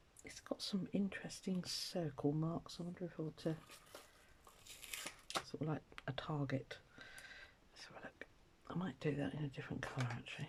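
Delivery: fast whispered muttering under the breath. Working on a piece with circle marks, the speaker thinks aloud: mumbling to self. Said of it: "I'm mumbling to myself".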